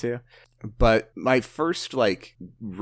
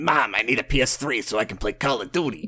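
put-on teenage kid voice, about 14 years old; 2 semitones higher than usual. Recalling asking Mom for a PS3 as a kid: imitating their 14-year-old self. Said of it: "that's how you sounded when you were 14".

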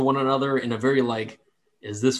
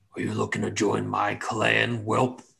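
gruff, rough, creaky orc brute voice; 3 semitones lower than usual. Voicing the biggest, meanest orc asking to join his clan: voicing the big mean orc leader. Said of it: "the biggest, meanest one".

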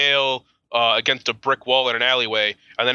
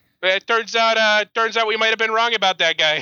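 attempted put-on Philadelphia accent; 10 semitones higher than usual. Podcast host acting out Pennsylvania's apology after the pardon, in a failed Philly accent. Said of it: "I can't do a Philly accent".

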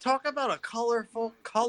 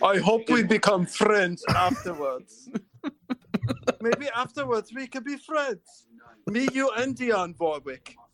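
fake German accent throughout. Joking about becoming friends afterwards, in a put-on German accent. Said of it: "that was a German accent, not Russian".

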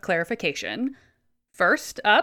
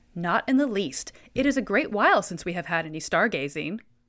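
ordinary talk

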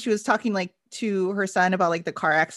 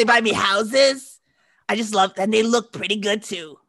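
impression of a woman's voice, louder; 2 semitones higher, 4 dB louder than usual. Imitating a character's voice from a show being discussed. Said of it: "her voice where she's like".

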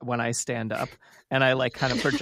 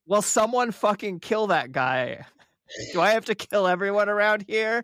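pitched-up, shouted yell in character; 8 semitones higher than usual. Playing a character yelling at a teammate to kill a soldier: in-character yell. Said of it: "I yell".

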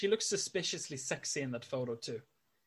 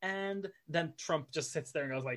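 ordinary delivery

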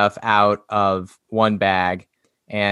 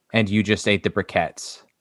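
put-on deadpan delivery, much faster. Describing a Garfield comic, acting out Jon's line, mock-deadpan. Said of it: "deadpan saying".

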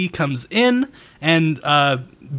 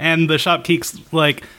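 ordinary talk, nothing marked

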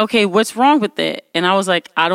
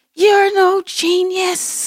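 mock furious, very high-pitched angry yell; 10 semitones higher than usual. Retelling a dispute over wiped files, speaker reenacts screaming at the guy. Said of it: "I'm like screaming at the guy".

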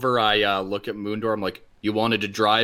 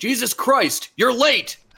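very high, drawn-out, loud shout; 14 semitones higher, 4 dB louder than usual. Voicing a character who shouts across at another ship: shouting across to a ship. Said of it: "I shout over at him".

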